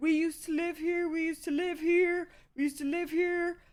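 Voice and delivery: very loud, high, insistent, repeated yelling. Retelling how trespassers yelled back at the speaker: imitating someone yelling. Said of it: "they start yelling back at me".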